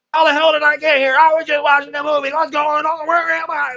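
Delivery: shrill, very high, very loud, frantic panicked babble. Retelling an anime clip, acting out Yuji flipping out. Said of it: "he was just like flipping out".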